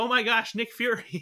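mock high, loud, drawn-out starstruck fangirl gush. Retelling a trailer scene, imitating Ms. Marvel fangirling out. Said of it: "she's, like, fangirling out".

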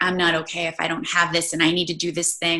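ordinary talk

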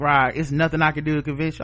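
ordinary talk

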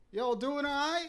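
mock, high-pitched, hollered call. Retelling a man in a pickup truck calling across a parking lot: imitating a man yelling. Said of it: "he yells at me from the parking lot".

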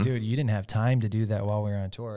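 plain

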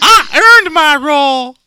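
very high, loud, slow cartoon-mouse squeak. Pretending to be the actress thanking Mike for the praise: Sheri Moon impression. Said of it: "She sounds like Mickey Mouse".

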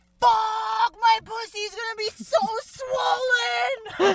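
very high, very loud, drawn-out primal scream. Retelling what a client screamed during birth: imitating a client screaming. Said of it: "my client just screamed".

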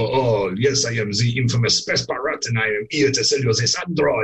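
put-on hammed-up comedy French accent played for laughs. Describing a favourite scene, imitating Patrick Stewart's comedy French accent. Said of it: "putting on his comedy French accent".

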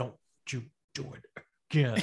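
low, deep voice pushed through closed teeth. Imitating what a woman would say, leaning down: deep voice through pursed lips. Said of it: "she gets this deep voice".

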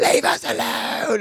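put-on scream, slow and high.

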